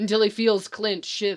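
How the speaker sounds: plain reading voice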